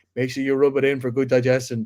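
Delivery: ordinary delivery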